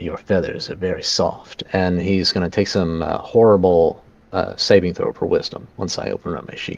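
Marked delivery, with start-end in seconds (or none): 0.0-1.6 hushed, soft, breathy whisper. A player's character makes eye contact with the owlbear and whispers to it: whispering. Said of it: "and I whisper".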